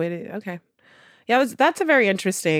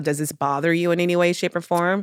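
plain

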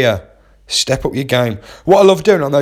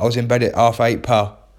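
usual speaking voice

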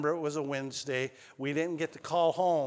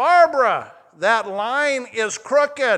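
very loud, very slow, high, booming, drawn-out yell; 8 semitones higher, 11 dB louder than usual. Retelling how Grandpa yelled from a block away: imitating Grandpa Scott yelling. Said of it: "he'd yell".

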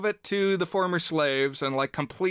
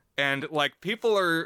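ordinary delivery

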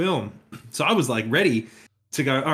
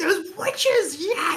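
mock overjoyed, ecstatic, very high-pitched outburst. Retelling a scene where a man leaps from his chair, mimicking an ecstatic man. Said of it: "He was ecstatic".

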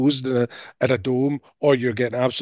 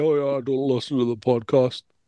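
put-on blasé, indifferent tone. Mimicking the other speaker's claim about the podcast: imitating someone acting blasé.

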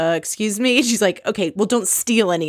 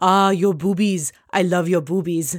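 put-on heavy French accent, laid on thick. Act out Frankie talking to Bethany while washing her hair, in Frankie's really thick French accent. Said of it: "he has this really thick French accent".

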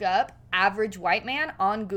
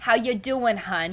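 put-on New Jersey accent, mom voice. Describing the voices they slip into together, demoing a Jersey Shore mom voice. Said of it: "like kind of like the Jersey Shore mom".

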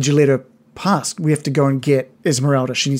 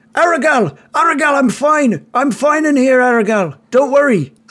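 very high, high-pitched calling-out shout; 11 semitones higher, 4 dB louder than usual. Voicing a character who calls out to a companion reaching for him: calling out. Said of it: "and he calls out".

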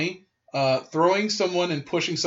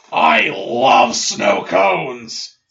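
very loud, slow, dragged-out, creaky, rough bellow; 3 semitones higher, 9 dB louder than usual. Retelling an announcement made in front of everyone: Mr. McMahon voice. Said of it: "in his Mister McMahon's voice".

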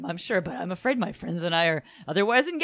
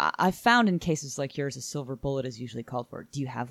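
put-on calm, unruffled, coolly factual matter-of-fact delivery; 5 semitones lower than usual. Retelling a movie scene where a professor answers calmly: imitating a matter-of-fact tone. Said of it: "he's so matter of fact".

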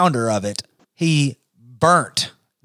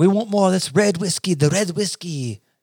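fake, put-on French accent; 6 semitones higher than usual. Telling whiskey history, voicing the french asking for more red whiskey; mock french accent. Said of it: "Is that my French accent?".

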